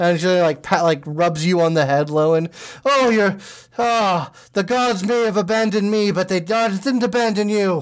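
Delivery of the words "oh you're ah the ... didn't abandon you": put-on dwarven woman voice, pitched up. Voicing a dwarven priest captain thanking the party: voicing a dwarven priest captain. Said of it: "she's a dwarven woman".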